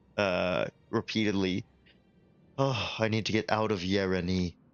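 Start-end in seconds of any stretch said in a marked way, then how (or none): 2.6-4.5 quiet muttering under the breath. Voicing a lady overheard repeating to herself: muttering under her breath. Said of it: "muttering under her breath".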